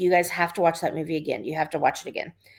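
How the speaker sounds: imitated annoyed woman's voice. Retelling a mother's words to her kids: imitating annoyed mom. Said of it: "she would just get annoyed".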